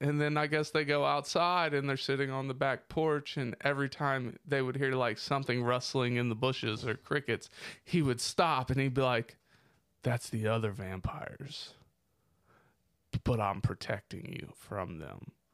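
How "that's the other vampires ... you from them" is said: mock utterly serious, earnest delivery, no joking. Retelling what a man said about other vampires: imitating someone dead serious. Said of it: "dead serious".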